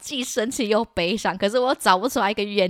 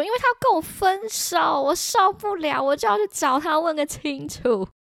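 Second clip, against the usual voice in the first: play-acted, high-pitched, roaring, raging shout; 7 semitones higher than usual. Retelling shouting at dad about a breakup: imitating own past shouting. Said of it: "我就对他大喊说".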